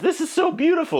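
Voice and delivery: put-on very high, swooning girly gush.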